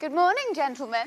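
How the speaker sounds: happy, sunny voice. A woman greets the gentlemen in the morning: happy, cheerful. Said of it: "You sound very happy today".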